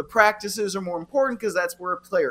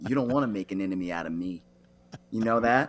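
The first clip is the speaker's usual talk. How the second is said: quiet, playful, put-on menacing, intimidating voice; 11 semitones lower, 5 dB quieter than usual. Joking to the host about making an enemy: mock intimidating voice. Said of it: "your intimidating voice is quite intimidating".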